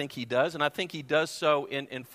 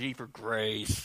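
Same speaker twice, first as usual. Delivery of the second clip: grudging, low mutter through gritted, clenched teeth; 5 semitones lower, 5 dB quieter than usual. Speaker imitates an earlier congregation answering, imitating a clenched-teeth reply. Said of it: "they said it through clenched teeth".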